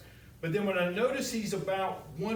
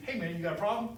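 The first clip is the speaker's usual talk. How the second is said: aggressive, tense, confrontational, tension-raising tone. Contrasting a casual greeting with one that raises tension: tense, confrontational tone. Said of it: "You notice how the tone, the action of the hand, it kind of raised up the tension a little bit".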